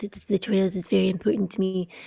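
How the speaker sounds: hushed, nearly whispered delivery. Showing how a character sounds in the audiobook: terrible Werner Herzog impression. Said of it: "that's a terrible impression".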